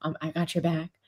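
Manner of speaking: quiet mock whisper. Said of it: "you see him whispering to LeBron courtside".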